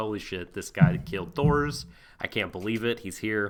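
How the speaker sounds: plain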